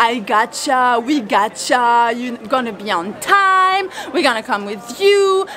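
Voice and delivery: slow, drawn-out American accent.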